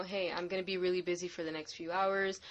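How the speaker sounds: ordinary delivery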